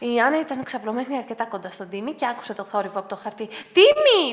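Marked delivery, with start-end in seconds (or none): 3.5-4.3 high shout with the name drawn out long. Anna hears Timmy rustling a paper parcel and calls to him: shouted. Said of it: "του φώναξε".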